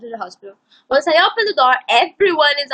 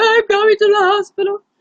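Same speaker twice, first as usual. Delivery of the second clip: tearful, high-pitched crying voice; 8 semitones higher, 4 dB louder than usual. Retelling answering two schoolgirls on the street: mock crying.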